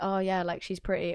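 ordinary delivery

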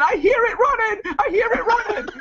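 mock screaming. Recounting what she screamed while he threw stones into the bushes, retelling a scream. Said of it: "and she's screaming".

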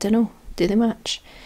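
normal talking voice

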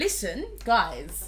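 upper-class voice.

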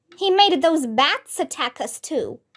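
plain reading voice

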